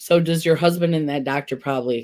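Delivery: ordinary delivery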